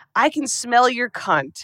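slow, drawn-out hissing voice. Retelling a film scene where an inmate hisses at Clarice: hissing as Miggs. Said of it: "he hisses at Clarice".

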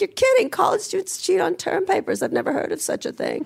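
put-on very high, sing-song, old Hollywood mid-Atlantic accent. Complaining about media coverage of ChatGPT, in a put-on mid-Atlantic accent. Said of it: "You did such a great mid-Atlantic accent".

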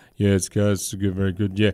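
put-on flat monotone voice. Imitating Wayne Bennett, win or lose, in a Wayne Bennett monotone voice. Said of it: "He always has that same sort of monotone voice of".

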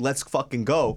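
acted, furious angry outburst. Recounting a confrontation with a man and his lady, retelling an angry outburst. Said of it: "I'm so fucking angry".

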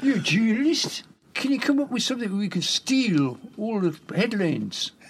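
put-on Newcastle accent. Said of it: "That's my Newcastle accent".

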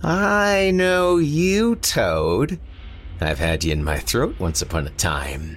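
high, nasal, noisy god voice. Narrating a fantasy tale, the heron god speaks to toad: nasal, noisy voice. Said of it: "nasally and dinful".

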